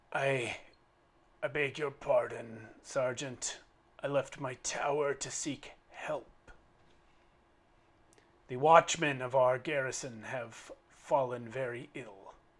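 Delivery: hoarse female voice, short of breath. Voicing a rider who begs for help for her watchmen: hoarse female voice, short of breath. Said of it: "you hear a hoarse female voice say".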